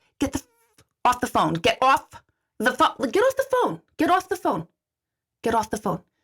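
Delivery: swooping pitch, seething rage building with every repeat. Retelling watching a customer stay on her phone: imitating her own rising rage. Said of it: "my rage meter's now going up".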